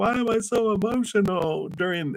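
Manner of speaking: high, baffled, confused tone.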